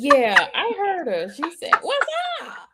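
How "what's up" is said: very high-pitched, casual, tossed-off delivery. Retelling what the other guest just said: imitating Nicole's voice. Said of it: "I can't do it quite like her".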